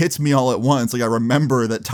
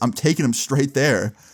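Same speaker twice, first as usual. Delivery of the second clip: ordinary talk, nothing marked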